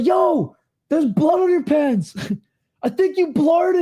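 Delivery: high-pitched yelled voice. Retelling a tv scene where someone yells at a guy: imitating someone yelling. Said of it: "yells at the guy".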